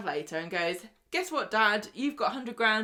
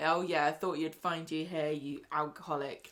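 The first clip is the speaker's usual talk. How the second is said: put-on disgusted sneer, lower and quieter; 5 semitones lower, 4 dB quieter than usual. Retelling a soap scene where a doctor sneers at a patient: imitating a disgusted sneer. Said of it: "looking at him all disgusted".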